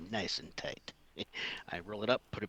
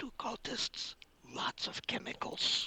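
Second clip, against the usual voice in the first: high, very quiet, barely audible whisper. Speaking in character to another character: very quiet whisper. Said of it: "I kind of very quietly whisper to".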